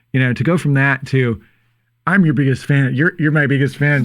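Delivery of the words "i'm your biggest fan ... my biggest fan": ordinary delivery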